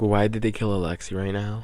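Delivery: ordinary delivery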